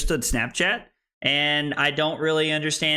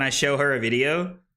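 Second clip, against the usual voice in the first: usual speaking voice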